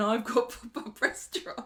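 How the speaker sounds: play-acted smug gloating, slow, high, savoured, drawn out. Retelling one character gloating to another in the street: imitating gloating.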